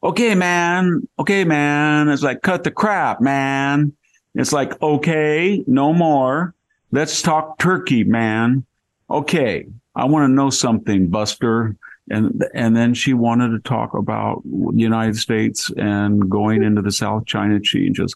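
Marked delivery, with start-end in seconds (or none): 0.0-11.8 put-on high Valley Girl accent, It's stretched. Imitating what a woman said, breaking into a valley girl accent. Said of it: "broke out in a Valley Girl accent".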